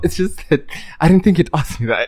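speaking through laughter. Surprised by the other person's question, the speaker answers laughing while talking. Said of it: "I'm trying to laugh".

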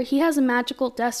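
normal talking voice

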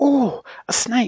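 loud, very high startled alarmed outcry. Bessie, touched by something coming down the slide, crying out in alarm. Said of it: "cried Bessie in alarm".

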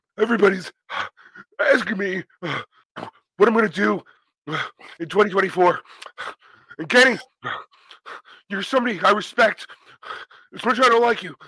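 breathless, gasping speech. Imitating a wrestler's promo after a match, imitating MJF out of breath. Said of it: "just doing an impression of you, and now I'm out of breath".

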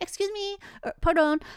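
high, slow, timid hesitant voice. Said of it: "you're like".

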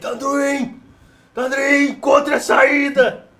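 yelling out. A tabletop player voices their character calling out to another character, shouting. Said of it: "Eu gritei".

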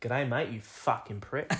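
put-on Australian accent. Claiming they can only manage it when swearing: put-on Australian accent. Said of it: "I can do it if I swear".

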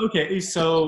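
voice cracking and breaking. An interviewer moves on to the next question, voice cracking. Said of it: "a little voice crack there".

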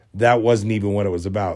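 ordinary delivery

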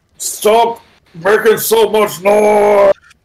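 drawn-out, very slow, high monster creature yell. Voicing a creature yelling at the players: creature yelling. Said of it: "This one just yells".

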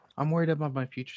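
usual speaking voice

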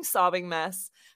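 ordinary talk, nothing marked

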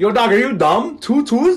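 put-on Toronto accent. Joking about speaking after one week in Toronto: put-on Toronto slang accent. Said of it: "this is my voice one week as a Toronto man still".

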